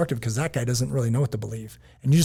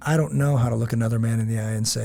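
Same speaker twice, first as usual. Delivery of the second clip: normal talking voice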